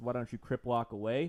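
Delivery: normal talking voice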